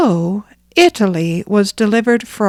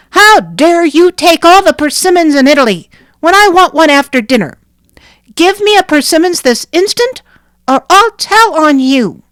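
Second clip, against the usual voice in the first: small, high-pitched voice crying out angrily; 8 semitones higher, 6 dB louder than usual. Narrator reads the line cried out at the brigand chief: angry little voice crying out. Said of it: "an angry little voice that cried".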